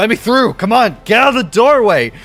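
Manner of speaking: very loud, very high-pitched shouting. Voicing bandits crowding a doorway: bandits yelling at each other. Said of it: "yelling at each other".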